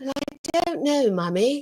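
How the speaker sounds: put-on high-pitched little girl's way of talking. Telling how her child answered her question, imitating her child's voice. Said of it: "how she talks".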